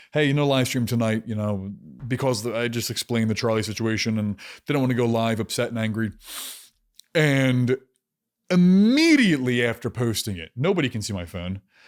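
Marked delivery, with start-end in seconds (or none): none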